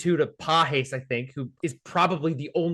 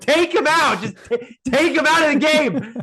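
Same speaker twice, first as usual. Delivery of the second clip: very high, loud, drawn-out scream; 12 semitones higher, 7 dB louder than usual. Retelling watching the game at home: imitating own screaming at TV. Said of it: "I was screaming at my television".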